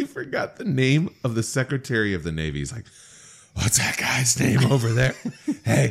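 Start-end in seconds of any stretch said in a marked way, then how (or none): 3.5-5.9 put-on loud stage whisper. Retelling a drunk speech in the Senate chamber: imitating Andrew Johnson's loud stage whisper. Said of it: "He called out in a stage whisper".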